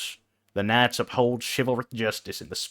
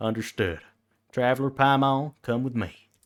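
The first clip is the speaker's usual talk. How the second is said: silly, goofy cowboy voice; 2 semitones higher than usual. Reading a game character's lines aloud: silly cowboy voice. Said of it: "me doing my silly cowboy voice".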